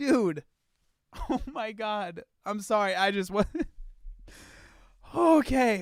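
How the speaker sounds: talking through helpless giggles. Reacting to a clip about taking patients to the zoo: laughing while talking. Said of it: "I'm just laughing at the thought of this".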